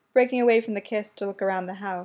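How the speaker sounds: plain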